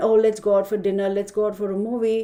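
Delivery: ordinary talk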